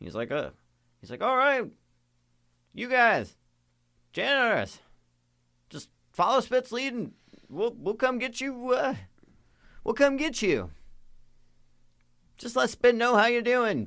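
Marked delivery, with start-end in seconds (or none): 1.2-13.9 very high, loud yell carrying across a distance. Voicing a character calling back to the players from far away: yelling from far away.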